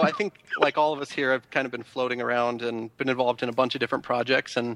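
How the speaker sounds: normal talking voice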